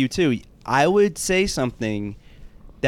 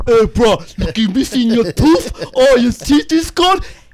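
loud, raised, teasing Hawaiian pidgin; 9 semitones higher, 9 dB louder than usual. Retelling how he teased someone all day as a kid, imitating the way someone talked. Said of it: "I was imitating the way he talked".

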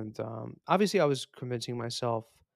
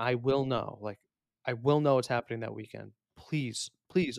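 put-on begging, pleading tone. Retelling how she asked him to cancel the plan: imitating her begging. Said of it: "begging me".

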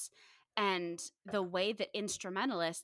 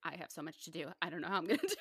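ordinary delivery

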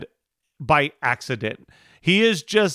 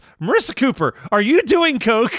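very sincere, earnest voice, pitched up; 9 semitones higher, 3 dB louder than usual. Recapping a show scene where Summer questions Marissa Cooper: imitating Summer sincerely. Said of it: "Summer very sincerely goes".

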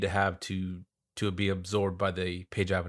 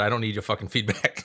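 ordinary delivery

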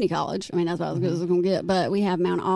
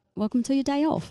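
bad, high-pitched, put-on English accent; 8 semitones higher than usual. Trying out a line when asked, put-on English accent. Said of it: "are we in England?".

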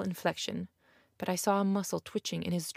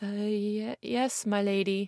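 stammering, stuttering speech; 2 semitones higher than usual. Emily answers her lady's question, stammering. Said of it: "stammered Emily".

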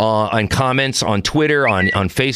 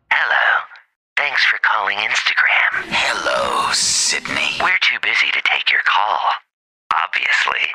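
low, eerie, horror-style recorded phone-line voice; 4 semitones lower than usual. Retelling a call to a company's phone line, creepy Instagram phone voice. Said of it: "She almost sounds like the female version of the scream voice".

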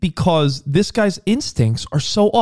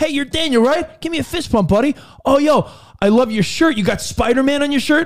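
put-on upbeat dad voice, higher pitch; 7 semitones higher than usual. Retelling greeting a child named daniel at school: dad-like manner. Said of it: "Sounds very dad-like to me".

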